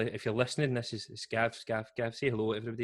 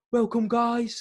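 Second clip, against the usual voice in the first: shrill, very high, loud commentator-style scream; 12 semitones higher, 7 dB louder than usual. Retelling a mad English guy screaming live in the headphones: imitating a commentator screaming. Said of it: "he's screaming".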